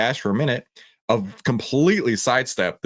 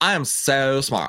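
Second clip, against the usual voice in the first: slow, drawled, put-on Valley Girl accent; 3 semitones higher than usual. Acting out an investor buying AMD stock: put-on Valley Girl voice. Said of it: "I'm Valley Girl [name] today".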